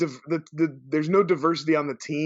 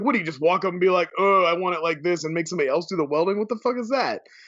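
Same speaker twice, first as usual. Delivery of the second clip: ordinary talk, nothing marked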